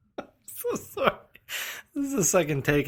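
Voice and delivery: very high-pitched, giggling and laughing through the words. Apologizing during a show's second take, can't stop laughing. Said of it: "I can't stop laughing".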